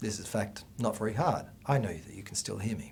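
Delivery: very quiet, low, turned-down speaking voice. Teaching about speaking on camera, demonstrating speaking quietly. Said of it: "it's just as easy for me to speak at this level".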